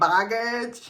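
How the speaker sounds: exaggerated put-on diva drag queen voice. Talking about emotional baggage, drag queen voice on 'baggage'. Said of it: "I said it like a, a drag queen or something".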